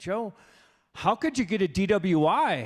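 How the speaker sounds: acted, patronizing, talking-down tone in slow drawl. Retelling how people asked a question: imitating a condescending voice. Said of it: "in this condescending voice".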